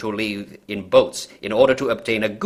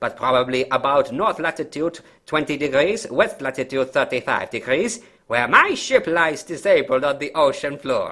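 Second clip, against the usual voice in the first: put-on German officer voice, pitched higher; 4 semitones higher than usual. Reading the opening of a story aloud: Colonel Klink voice. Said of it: "I'm not gonna keep doing that voice".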